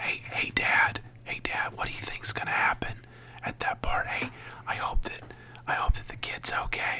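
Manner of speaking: barely audible, hushed, breathy whisper. Retelling a brother's questions during a quiet movie: imitating a whisper. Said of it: "was just whispering".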